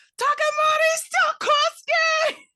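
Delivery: very high, shrill, horrified and furious shout. Turning around to yell someone's name, the speaker does a furious, horrified mom yell. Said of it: "in like the most mom voice, furious, horrified".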